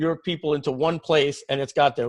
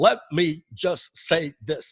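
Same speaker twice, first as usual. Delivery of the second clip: very slow, deliberate, each word dragged out. Answering viewers' questions, doing a Bernie Sanders impression. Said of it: "or I'll do my Bernie Sanders impression".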